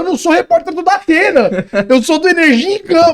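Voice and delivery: high, loud yelling. Retelling his own reply shouted from inside the car: retelling his own shout. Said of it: "E eu gritando do carro".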